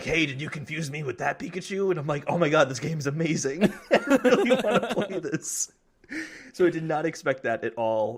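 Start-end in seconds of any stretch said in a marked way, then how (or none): 0.0-1.9 voice sounding like a years-long smoker. Describing a game trailer, the speaker voices the detective-hat Pikachu like a longtime smoker. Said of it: "talking like he's been smoking for 15 years".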